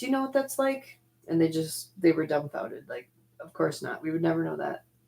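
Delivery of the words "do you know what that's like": pointed, high-pitched yelling. Recounting confronting two guys about the time travel program, retelling own yell. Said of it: "I'm yelling at these two guys".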